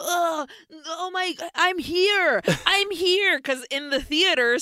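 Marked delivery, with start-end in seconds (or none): 0.0-3.4 high scream stretched out long. Recounting a sacrifice scene in a movie, imitating the character screaming. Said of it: "he's screaming like".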